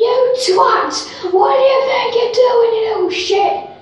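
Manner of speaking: put-on, very high, furious angry screaming. Retelling how a drunk woman went at a biker on a push bike, imitating a woman shouting. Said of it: "she was shouting".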